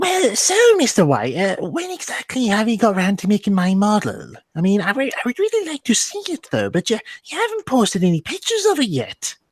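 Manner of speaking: high, lilting, sing-song character voice. Retell how he went into Daisy mode to question you about a model, in the Daisy voice. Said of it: "he put on the Daisy voice".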